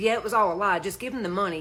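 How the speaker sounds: usual speaking voice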